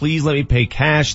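mock, acted pleading tone. Retelling a story of trying to get on a plane, retelling a plea. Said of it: "I'm pleading with the person".

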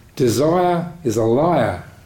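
bad Australian accent, spoken very slowly. Retelling what an Australian man said at a Dhamma talk, in a bad Australian accent. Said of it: "My bad Australian accent".

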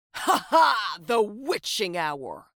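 terrible, loud cackling cry. Told the hour is nowhere near, a character shouts with a terrible cackle. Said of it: "Seb shouted with a terrible cackle".

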